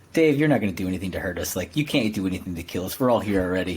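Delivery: hushed half-whisper, under the breath. Retelling what Vellner said during Dave's speech: imitating Vellner half-whispering. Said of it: "he's, like, whispering, he's like".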